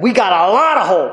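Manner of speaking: acted enthusiastic delivery, upbeat, rousing and lively. Quoting a line from a commercial, imitating an enthusiastic speaker. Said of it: "He says it with enthusiasm".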